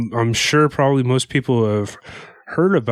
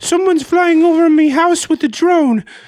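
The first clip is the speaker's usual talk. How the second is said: very high, loud put-on Irish accent; 6 dB louder than usual. Acting out locals gossiping to one another, in an Irish accent. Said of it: "Why were they Irish?".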